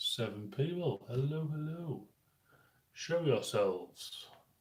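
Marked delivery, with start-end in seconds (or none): 1.1-4.3 put-on posh voice, slow and high. Speaker, talking about a magazine, suddenly breaks into a posh voice. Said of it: "I don't know why I'm talking in like a posh voice".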